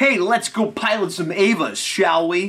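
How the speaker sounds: booming, high, odd put-on American accent. Calling himself a nerve agent now, the speaker talks in a weird American accent. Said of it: "some weird American accent".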